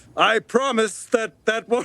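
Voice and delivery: talking while breaking into laughter. Making a promise to a group and breaking into laughter mid-line: laughing while talking. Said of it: "I can't say that without laughing".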